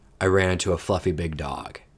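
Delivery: ordinary delivery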